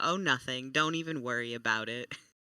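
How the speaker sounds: casual, nonchalant, offhand brush-off tone. Playing a character answering the bosun: nonchalant tone. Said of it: "this little nonchalant, like, tone and voice".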